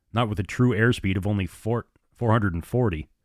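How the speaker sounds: ordinary delivery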